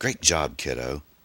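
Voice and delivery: ordinary talk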